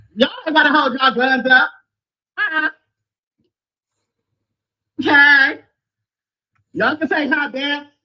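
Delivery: high-pitched, shouting yell. Calling out to a swat team walking past in formation: yelling. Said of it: "she's yelling at the squat team".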